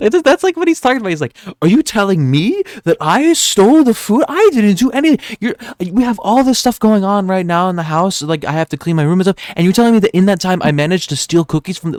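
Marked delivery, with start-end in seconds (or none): 1.6-12.0 put-on defensive toddler voice through gritted teeth. Reacting with friends to the voice someone is doing, imitating it: mock-defensive kid voice. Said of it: "that's literally the type of like voice he's doing".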